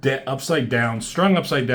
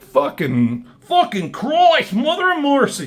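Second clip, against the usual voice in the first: put-on slipping into Australian accent, higher and louder; 14 semitones higher, 4 dB louder than usual. Retelling a comic character's line, slipping into an australian accent. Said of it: "I went to an Australian, um, accent".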